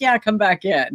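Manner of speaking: ordinary talk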